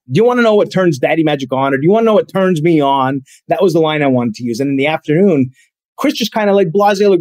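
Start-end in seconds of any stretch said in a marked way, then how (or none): none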